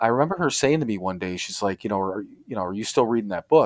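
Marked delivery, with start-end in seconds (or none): 2.0-3.7 imitated accusatory tone. Retelling how she asked about the unread book: imitating an accusatory tone. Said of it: "almost accusatory type of way".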